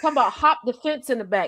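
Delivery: ordinary delivery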